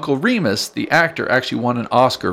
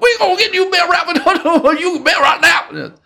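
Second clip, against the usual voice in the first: squeaky, very high-pitched cartoon critter voice; 3 dB louder than usual. Showing a listener how a movie's fox sounds, Brer Fox impression. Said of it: "That's what he sounds like".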